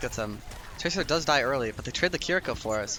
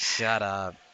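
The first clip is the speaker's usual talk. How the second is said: mock, really grumpy, irritated delivery; 4 semitones lower than usual. Retelling how the producer told him to shut up, mock-grumpy shut up. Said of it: "He said it in a really grumpy voice too. It's like".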